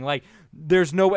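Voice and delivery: ordinary talk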